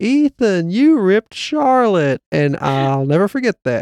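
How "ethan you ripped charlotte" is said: put-on shocked, high-pitched scream. Retelling a mother at mini golf after her son hit his sister: imitating a woman screaming. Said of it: "the woman screamed".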